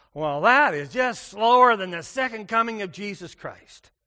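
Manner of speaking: very loud, oath-like, cursing-style outburst. A pastor quotes a man who liked to goad him: retelling a line said like swearing. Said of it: "he would say it like he was swearing".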